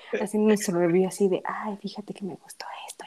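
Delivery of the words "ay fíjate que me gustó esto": soft, hushed whispered ASMR voice. Acting out a relaxed review line for a rainy episode: mock soft ASMR voice. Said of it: "esas voces de A S M R".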